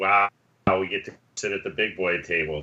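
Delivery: snide, mocking, sarcastic tone. Saying a line in character at a shared table: snide. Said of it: "I just wanna say in a snide way".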